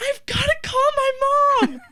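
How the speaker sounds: very high, loud, hollered-out yell. Recounting a parking-lot moment, the speaker re-enacts what was yelled: retelling a yell. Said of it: "And I yell".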